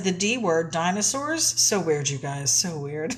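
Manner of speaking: usual speaking voice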